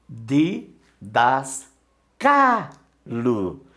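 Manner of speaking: syllable by syllable, stress on CA.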